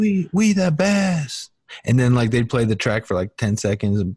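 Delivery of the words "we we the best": very high scream, drawn out. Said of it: "screaming the little tags".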